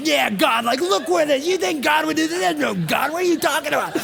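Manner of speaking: out-of-control furious outburst, high and rough. Retelling screaming at his wife in the car, retelling losing it. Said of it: "I was losing it".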